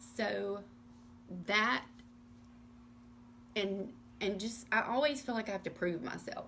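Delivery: emotional, near tears. Sharing her personal story with listeners, holding back tears. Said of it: "I'm gonna try not to cry".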